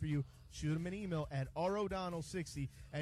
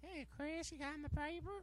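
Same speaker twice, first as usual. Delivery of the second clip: put-on creepy old person voice; 11 semitones higher, 6 dB quieter than usual. Prompted to do the one voice done well, creepy old voice. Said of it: "that creepy old voice".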